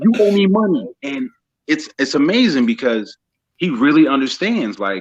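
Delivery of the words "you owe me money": mock child yelling, very high-pitched.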